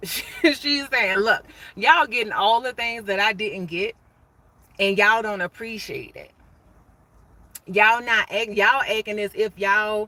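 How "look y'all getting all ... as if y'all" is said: ordinary delivery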